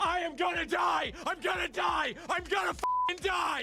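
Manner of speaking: screaming in hysterics. Describing the dread of Irukandji syndrome, acting out a victim: hysterical screaming. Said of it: "hysterically screaming that you are about to die".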